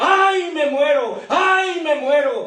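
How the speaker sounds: mock high, drawn-out, anguished, desperate scream. Telling a joke, the speaker acts out a man under a roller, imitating a man's desperate scream. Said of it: "y gritó el hombre".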